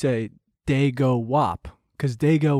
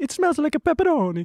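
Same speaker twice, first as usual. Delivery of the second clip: very high, put-on New York Italian accent; 13 semitones higher than usual. Showing what the new york version would sound like: new york italian accent. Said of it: "A New York would be like".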